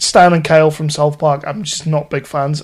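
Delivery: ordinary delivery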